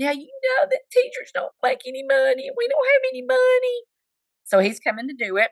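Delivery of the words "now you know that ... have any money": very high, put-on, whimpering whine. Retelling begging the professional to come do the job, in a put-on whiny voice. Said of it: "I used my whiny voice to say".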